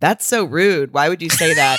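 usual speaking voice

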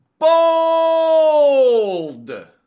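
booming, very high, drawn-out shout. Doing the bold prediction bumper for the show: yelling. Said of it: "it's just you yelling".

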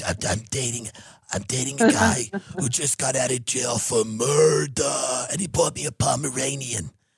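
the word murder drawn out long. Showing the only impression that can be done: Big Ange impression. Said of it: "impression I can really do is a character named Big Ange".

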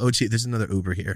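ordinary talk

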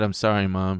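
normal talking voice

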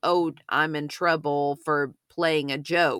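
usual speaking voice

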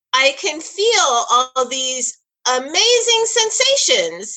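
sarcastic tone, high-pitched and slow.

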